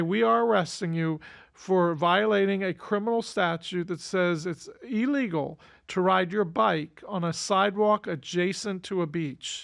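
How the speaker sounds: ordinary talk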